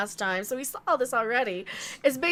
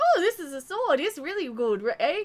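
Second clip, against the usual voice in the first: badly attempted, failed New Zealand accent; 4 semitones higher than usual. Joking about casting choices, imitating someone in a bad New Zealand accent. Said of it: "I can't do a New Zealand accent".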